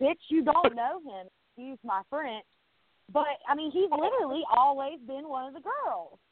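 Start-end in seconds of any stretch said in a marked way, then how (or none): 0.0-1.3 put-on scream, higher pitch. Telling how she reacted while watching Paul on TV, re-enacting a scream at the TV. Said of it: "I literally screamed at the TV".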